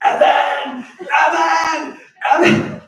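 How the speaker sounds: primal top-of-lungs scream, very high, shrill and loud. Recalling her losing track of him in the store, imitating her screaming his name. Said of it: "she would immediately start screaming my name".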